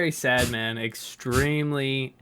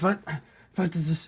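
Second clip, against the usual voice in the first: startled, surprised common-folk character voice, higher; 5 semitones higher than usual. Voicing a commoner shopkeeper who notices something: surprised commoner shopkeeper. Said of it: "he notices and he's like".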